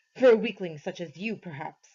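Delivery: snarling, snarled voice. Narrator reading the monster's voice answering its servant, snarling. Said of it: "The voice snarled".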